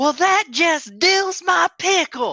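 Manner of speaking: shrill, very loud, drawn-out top-of-lungs bellow. A player's character in a crowded area shouts at the top of their voice. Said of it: "at the top of my voice".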